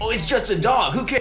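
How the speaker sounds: dopey dumb-guy voice, high and quick. Mocking people who downplay anime: dumb guy voice. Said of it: "Ten dumb guy voices".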